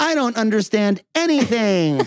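very high, stretched-out, drawn-out scream. Retelling how a boy answered a math question: imitating a scream. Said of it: "he just screams out".

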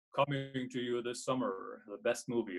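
big, movie-trailer voiceover announcer voice. Reading the podcast ad like a narrator: movie narrator voice. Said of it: "I started just reading it like a narrator, right? ... Like that, right? That voice".

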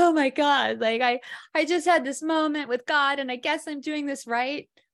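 put-on overwhelmed high speech broken by heaving sobs. Recalling going to the rabbi at a meditation retreat: retelling own sobbing speech. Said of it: "I'm sobbing and heaving".

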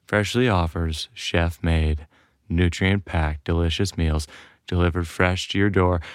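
grave, very low, serious soft-spoken voice. Reading a meal delivery ad in a put-on dinner voice: very serious, soft-spoken voice. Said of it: "my very serious, soft-spoken dinner voice".

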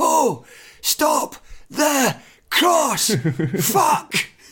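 very high, very slow, drawn-out swooping shout. Retelling the same voice from the dugout after a goal: imitating David Martindale shouting. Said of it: "he shouts".

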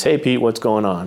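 mock laid-back, easygoing, cool, casual voice. Recounting phoning a man at his office, retelling a cool greeting. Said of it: "he said in that kind of cool voice".

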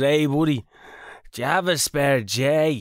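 put-on Dublin accent. Retelling a stranger greeting him while smoking out back: imitating a Dublin accent. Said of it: "he had a Dublin accent".

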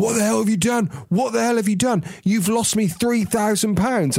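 high shouting voice. Telling a story about Dad's boss running in, retelling the boss's shouting. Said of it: "shouting at him and going".

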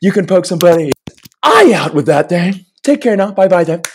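very high comedian voice, pushed way up. Showing off impressions he is working on, doing a Jim Carrey impression. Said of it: "I'll do a little Jim Carrey too".

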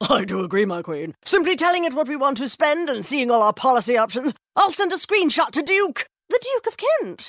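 grand, upper-crust posh royal voice. In an insurance ad, a speaker plays a tech-savvy royal, a royal family impression. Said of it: "this is my impression of a tech-savvy royal family".

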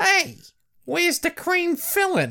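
put-on very high, thick, swooping New Jersey Brooklyn accent. Quoting what a cartoony-looking shark says, in a New Jersey Brooklyn accent. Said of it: "in a very New Jersey, Brooklyn-y accent".

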